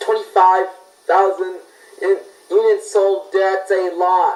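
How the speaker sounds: heavy, slow sarcasm.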